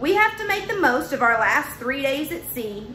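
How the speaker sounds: ordinary delivery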